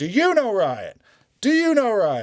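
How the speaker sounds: very high, loud, exasperated, frustrated bellowing. Imitating a captain yelling at soldiers: imitating a frustrated yell. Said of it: "he's just walking around yelling at people".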